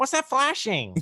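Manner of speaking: very high, plaintive, whiny complaint. Quoting a movie line in a whiny voice: whiny Luke Skywalker voice. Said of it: "one of those whiny Luke Skywalker line".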